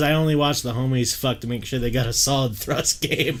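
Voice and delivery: plain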